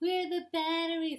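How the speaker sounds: high, hollering, calling-out voice. Wife acting out her husband's question to her, imitating husband calling out. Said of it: "That's my husband".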